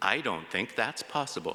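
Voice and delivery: calm, soothing, reassuring voice. A dad retells answering his distressed kids, retelling a soothing reply. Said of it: "I said in a soothing voice".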